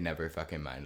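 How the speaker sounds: ordinary delivery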